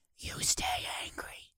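soft, unvoiced whisper spoken close into the mic.

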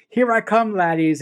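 ordinary talk

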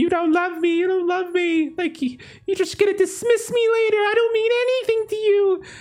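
very high, constant screaming whine. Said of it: "constantly screaming".

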